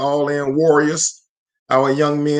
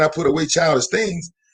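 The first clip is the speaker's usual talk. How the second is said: usual speaking voice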